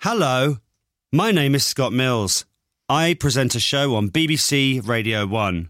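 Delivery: robotic, automated-service voice like a recorded message. Leaving a voicemail message, sounding like a robot. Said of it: "Why do I sound like a robot?".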